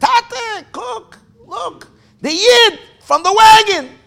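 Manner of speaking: put-on excited, high, loud little boy yell. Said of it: "he yells".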